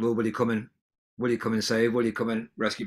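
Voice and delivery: ordinary talk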